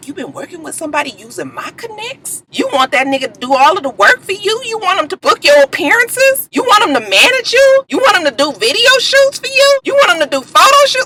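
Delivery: soft, meek voice. Retelling what Stevie said to someone, imitating Stevie's soft voice.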